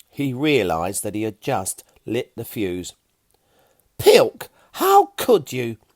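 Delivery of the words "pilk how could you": high, indignant, furious angry yell. Reading a story where a character scolds a companion: yelling angrily. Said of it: "Fiona yelled, as angrily at him".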